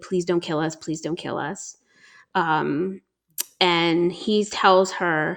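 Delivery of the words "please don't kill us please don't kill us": acted desperate pleading, begging over and over. Retelling how a kidnapped mother begged the man: imitating someone begging and pleading. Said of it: "the whole time begging and pleading".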